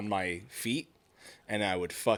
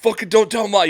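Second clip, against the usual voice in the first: very high, loud, frantic, panicked pleading; 12 semitones higher, 11 dB louder than usual. Retelling begging a sibling not to tell: imitating panicked pleading. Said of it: "you're panicking, just fucking pleading".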